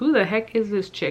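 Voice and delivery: ordinary talk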